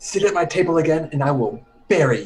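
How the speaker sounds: whispering. Voicing a character who marches towards the table and threatens: whispering. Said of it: "she whispers".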